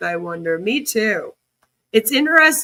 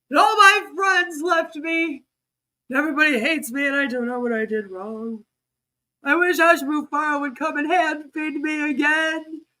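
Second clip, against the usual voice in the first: mocking sad voice, pitched higher; 5 semitones higher than usual. Imitating someone in a video who sounds sad: imitating someone sad. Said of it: "He's, like, so sad in this video".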